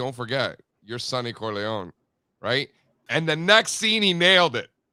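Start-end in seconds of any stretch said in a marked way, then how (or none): 0.0-1.9 whispered voice. Retelling how a director got an actor to play a mad scene: imitating a whisper. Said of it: "he whispers in his ear".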